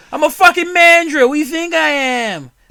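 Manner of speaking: very loud, high-pitched yelling in a Boston accent. Imagine the comedian voice acting for a Mandrill, and speak as it in a Bill Burr voice. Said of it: "I imagine Bill Burrow fucking uh, voice acting for".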